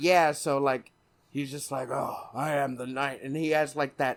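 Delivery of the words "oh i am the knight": robotic, distorted voice as through a filter. Mocking a movie's suit voice distortion: Batman robot distortion voice. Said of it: "the robot distortion voice on chat".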